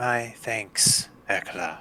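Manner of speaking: put-on mild, gentle, aged elderly voice. Narrating a scene, voicing a character who replies after a bow: soft, older voice. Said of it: "a soft, an older voice reply".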